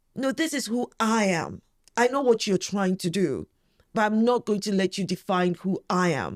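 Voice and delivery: plain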